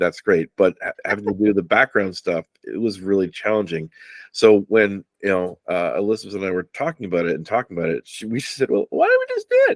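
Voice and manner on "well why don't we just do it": very high, squeaky little mouse voice. Retelling a talk with Elizabeth about doing it themselves, squeaky mouse voice. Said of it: "is that how I sounded? Like a squeaky mouse?".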